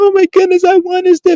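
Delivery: teary, very high blubbering crying voice. Mocking someone who wins a million dollars and starts crying: imitating someone crying. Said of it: "win a million dollars and start crying".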